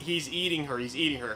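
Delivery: plain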